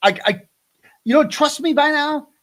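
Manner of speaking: high, mad, stammering voice. Retelling how a source got mad at him: imitating someone angry. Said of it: "so she got all mad at me".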